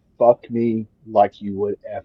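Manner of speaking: put-on condescending whisper. Quoting what she whispered in his ear, the speaker retells a condescending whisper. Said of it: "she whispers in my ear condescendingly".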